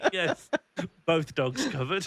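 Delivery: laughing while speaking.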